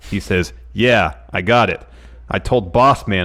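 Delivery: normal talking voice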